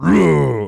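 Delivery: booming, drawn-out bellowing yell with a stretched vowel. Retelling a voice actor showing voices, imitating Bowser. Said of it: "Bowser's like".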